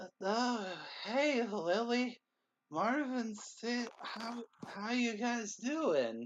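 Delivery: put-on slow, high, sloppy, slurred drunken voice. A drunk woman lifts her head and greets the group, drunk slurring as Clover. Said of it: "Clover, why are you drunk?".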